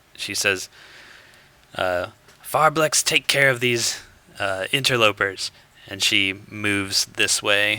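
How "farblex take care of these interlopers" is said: loud, yelled in-character shout. Voicing a villain calling to an ally while moving away: yelling out. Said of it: "she yells out".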